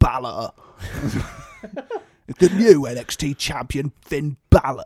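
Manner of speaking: badly done attempt at a stern English accent. Imitate William Regal announcing the new NXT champion, in a bad William Regal accent. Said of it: "I can't do his accent, but I will continue trying".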